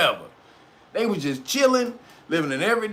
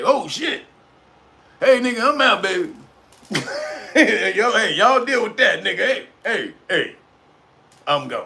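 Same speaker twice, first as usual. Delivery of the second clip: offhand, casual, throwaway delivery. Retelling how Fauci reacts as the truth comes out: imitating Fauci. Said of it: "Fauci's like".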